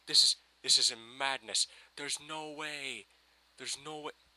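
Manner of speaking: over-the-top fake Scottish accent. Retelling his reaction on walking into the TARDIS, in an offensive Scottish accent. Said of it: "My Scottish accent's incredibly offensive".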